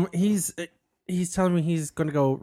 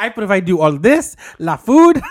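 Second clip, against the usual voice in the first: very loud, put-on Mexican accent; 3 semitones higher, 10 dB louder than usual. Improvising a scene as a man who calls himself the provider, in a Mexican accent. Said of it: "But with a Mexican accent".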